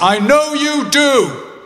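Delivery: loud carrying very high call. Leaving the hospital ward, the speaker quotes their dad calling after them, loud. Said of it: "I hear my dad say in a loud voice".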